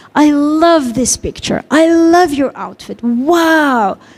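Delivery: slow, emotive delivery with a drawn-out wow. Showing how to talk to your child, demonstrating an emotional tone. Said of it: "You have to have this emotion".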